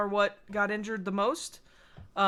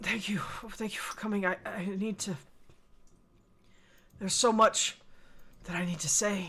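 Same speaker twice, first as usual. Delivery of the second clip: gasping words, quieter; 3 dB quieter than usual. A man in pain, helped to sit on the bed, thanks his visitor, words coming in gasps. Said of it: "his words come in gasps".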